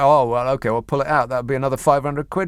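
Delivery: ordinary delivery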